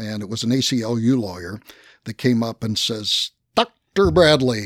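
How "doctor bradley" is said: play-acted, extremely condescending, talking-down tone. Retelling a deposition, the speaker mimics a lawyer addressing Walter in a mock-condescending tone. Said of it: "in a most condescending tone that they possibly can".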